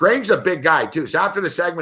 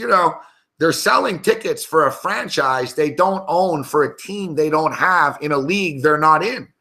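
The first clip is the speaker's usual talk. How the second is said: ordinary talk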